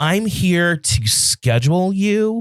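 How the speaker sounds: mock patronizing, condescending talking-down tone. Retelling a call from the woman scheduling her, mocking a condescending tone. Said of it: "like talking down to me like I'm an idiot".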